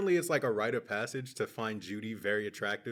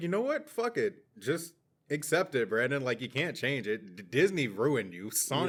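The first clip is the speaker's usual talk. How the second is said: ordinary talk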